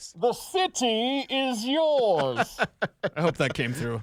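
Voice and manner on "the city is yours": every word dragged out very slowly, pitched up. Talking to James about the Broncos, doing a Bane impression. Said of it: "That's my Bane impression".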